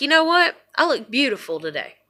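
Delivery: normal talking voice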